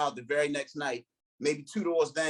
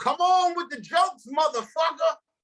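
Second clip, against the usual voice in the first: mock very high, shrill, loud heckling shout; 13 semitones higher, 6 dB louder than usual. Retelling how a man at the back of the crowd shouted at him, imitating the shout. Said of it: "this dude just shouts out".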